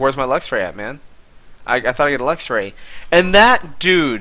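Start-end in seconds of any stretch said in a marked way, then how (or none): 0.0-2.7 put-on, teasing, sarcastic complaining tone. Retelling a sarcastic demand to a chat viewer for a promised prize: retelling own sarcastic remark. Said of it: "I was totally being sarcastic".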